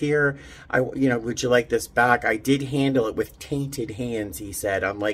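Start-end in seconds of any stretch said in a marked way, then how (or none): none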